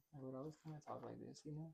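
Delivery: quiet whisper. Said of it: "I kinda whispered a lot".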